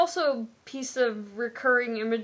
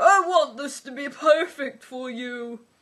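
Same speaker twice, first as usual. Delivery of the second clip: silly, goofy, raised-pitch voice; 2 semitones higher, 5 dB louder than usual. Reading a novel's sex scene dialogue aloud, in a goofy tone. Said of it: "it's worth reading in a goofy tone".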